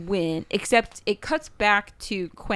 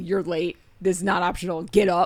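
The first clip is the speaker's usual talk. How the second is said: mock angry, scolding tone. The speaker recounts scolding someone who was late: retelling an angry scolding. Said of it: "I'm pissed because".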